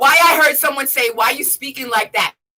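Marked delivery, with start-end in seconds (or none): none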